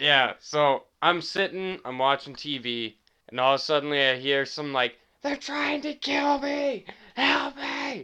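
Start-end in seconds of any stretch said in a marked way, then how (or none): 5.2-8.1 piercing, very high-pitched, shrill scream. Recounting hearing something while watching TV, imitating someone screaming for help. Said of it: "They're screaming at the top of their fucking lungs".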